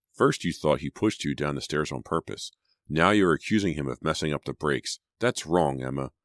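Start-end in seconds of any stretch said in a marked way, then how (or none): none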